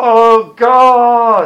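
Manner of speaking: very loud, high, passionate scream, God drawn out. Speaker recounts how Simon cried out to God, retelling a screamed prayer. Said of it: "He'd scream and he'd cry out with all the passion".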